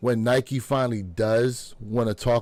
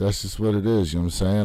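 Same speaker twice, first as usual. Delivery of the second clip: low, flat, listless droning monotone; 6 semitones lower than usual. Mocking how interviewees describe themselves: imitating a flat, low-energy interviewee. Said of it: "they're so flat".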